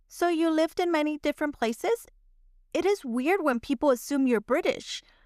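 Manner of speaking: normal talking voice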